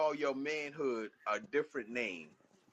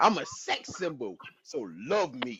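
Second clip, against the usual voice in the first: low, slow, deliberate, drawn-out, unhurried delivery; 4 semitones lower than usual. Repeating a line the way JP said it, imitating JP's delivery. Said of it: "I'm gonna say it like a J P said".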